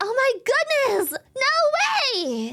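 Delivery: thrilled, high, swooping, very drawn-out excitement. Retelling how lines were voiced for a lore video: retelling own excited delivery. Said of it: "I was really excited".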